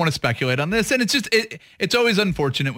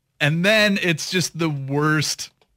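normal talking voice

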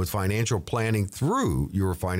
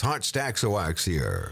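put-on radio DJ announcer voice. Told he has the radio voice, he puts it on: radio announcer voice. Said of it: "I can put on the radio voice".

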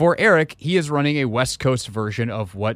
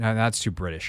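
ordinary talk, nothing marked

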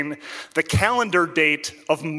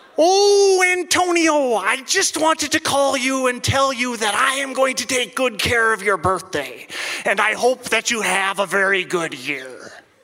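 put-on accent, half Italian, half Scandinavian; 6 semitones higher than usual. Retelling a birthday phone call from a caller claiming to be Saddam Hussein, in a half Italian, half Scandinavian voice. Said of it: "this half Italian, half Scandinavian voice".

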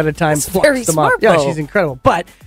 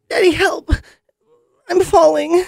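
put-on dramatic child voice, much higher; 14 semitones higher than usual. A speaker acts out a child pretending to fall off a cliff, imitating a child's dramatic plea. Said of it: "Notice how well you can imitate her?".

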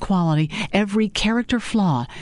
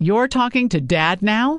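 mocking, sarcastic, disbelieving tone; 3 semitones higher than usual. Maddie answers a caller who mentions her father: asked sarcastically. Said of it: "Maddie asked sarcastically".

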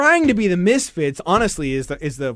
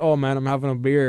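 imitated guilty, sheepish tone. Retelling an interviewee's reply: imitating a guilty, sheepish reply. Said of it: "just looked and sounded hella guilty".

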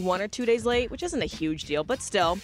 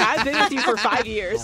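plain

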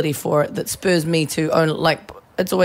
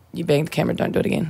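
put-on mutter under the breath, faster. Retelling what he said after a camera bump during a take: under his breath. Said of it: "He looks up at me under his breath and he's like".

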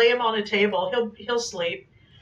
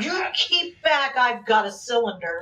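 normal talking voice

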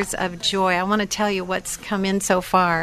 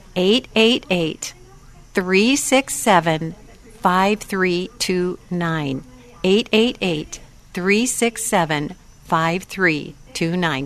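slow, deliberate, spelled-out delivery. Giving the phone number to listeners so they can call in, saying the number slowly. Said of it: "I'm going to say it slowly".

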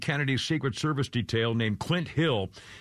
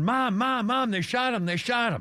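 mock screaming cry, very high pitched; 9 semitones higher than usual. Recalling watching a shooting live, retelling screaming for Mom. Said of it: "I started screaming".

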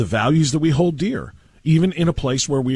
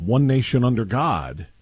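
slow, nation run into under God without pause. Explaining how the pledge is written: one nation under God, no pause. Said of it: "without the pause".

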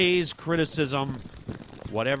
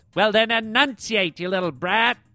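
pitched-up, stern, scolding strict schoolteacher voice; 7 semitones higher, 3 dB louder than usual. Acting out a teacher's reply to a pupil, grammar school teacher voice. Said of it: "sounds like my grammar school teacher".

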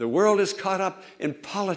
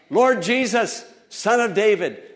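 mock pleading cry, loud and hard, calling out; 6 semitones higher, 5 dB louder than usual. Retelling a story of a blind beggar in a crowd: imitating someone crying out for mercy. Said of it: "blind Bartimaeus cried out".

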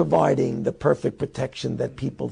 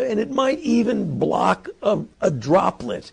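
sneering, mocking delivery. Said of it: "Yes, he's mocking".

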